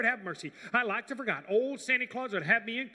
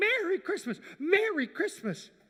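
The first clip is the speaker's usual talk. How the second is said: mock high-pitched hollering, calling yell; 8 semitones higher than usual. Retelling how Papa yelled from the wagon: imitating Papa yelling. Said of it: "he was just yelling".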